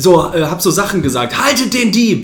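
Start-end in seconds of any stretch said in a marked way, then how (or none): 1.4-2.2 put-on frantic, high, panicked little child's shout. Retelling what they said while running after a theft, in a child's voice. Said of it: "und so und mit Kinderstimme".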